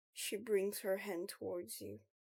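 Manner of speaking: ordinary delivery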